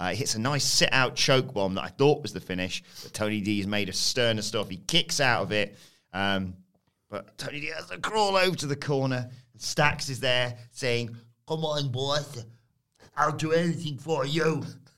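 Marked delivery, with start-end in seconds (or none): 11.5-14.6 put-on Geordie accent. Describing Stax urging Tony D from the corner: Geordie-accent Stax impression. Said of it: "He's gone Geordie there with your Stax".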